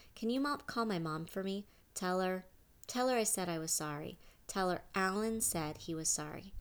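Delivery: ordinary delivery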